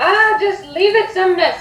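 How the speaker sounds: high, far-off, distant shout. Voicing a character shouting from the stables: Adriel shouting from afar. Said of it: "you hear Adriel shout from the stables".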